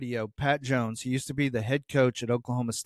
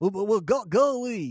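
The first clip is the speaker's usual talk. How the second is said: put-on voice, almost like a cartoon pig; 8 semitones higher than usual. Telling a story about Pat Jones, show how he talks in a Pat Jones voice, almost like Porky Pig. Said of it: "he talks like this".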